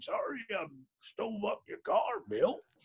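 soft, rough, gravelly put-on voice. Recalling a man who backed into his brother's car; imitating a gravelly voice. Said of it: "he had this kind of like gravelly voice".

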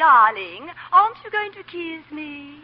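very loud, showy, high, drawn-out put-on woman's voice. Predicting what another woman will say, imitating another woman. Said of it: "And then she'll say".

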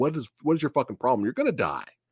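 restrained high half shout. Retelling a scene where Faye yells at Spike: imitating Faye yelling. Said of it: "yelling at him".

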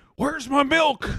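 mock sudden angry outburst, very high pitch. Imagining the neighbor turning on you: imitating Joe Biden suddenly mad. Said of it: "really mad about something just randomly".

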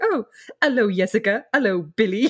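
cool, casual, nonchalant, offhand tone. Retelling a scene where Isabel greets others at her locker: imitating Isabel's nonchalant greeting. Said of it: "she's very kind of nonchalant".

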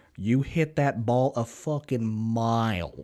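put-on stunned, slow Tennessee accent with "mile" drawn out. Retelling a buddy's stunned reaction to a long golf drive: Drew's Tennessee accent. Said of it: "Tennessee accent".

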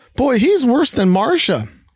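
small, high, squeaky voice. Reading a story aloud, a boy complaining about his brother: squeaky voice. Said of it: "with a squeaky voice says".

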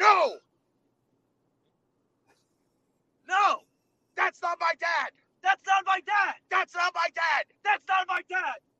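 very high, loud yelling, repeated over and over. Acting out a line yelled while pushing someone away: imitating a yell. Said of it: "you yell".

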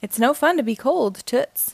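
plain

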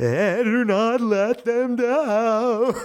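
goofy put-on voice, very high, very slow. Chuckling at an ominous warning, she teases the listener: goofy voice. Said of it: "in a goofy voice".

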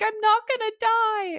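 mock very high, slow, weepy crying voice with relief. Retelling calling parents after a doctor's appointment: retelling tearful words. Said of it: "So in tears being like".

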